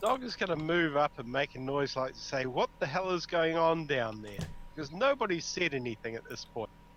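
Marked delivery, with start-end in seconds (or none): none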